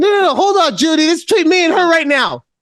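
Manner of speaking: yelling, pitched very high. Interrupting Judy while recording a conversation; yelling. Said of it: "I apologize for yelling".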